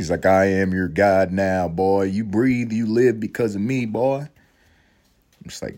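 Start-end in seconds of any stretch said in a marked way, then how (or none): 0.3-4.2 country bumpkin voice. Retelling a movie scene, imitating a country bumpkin slave owner. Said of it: "This guy was a country bumpkin slave owner?".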